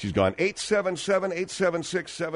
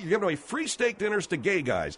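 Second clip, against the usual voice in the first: normal talking voice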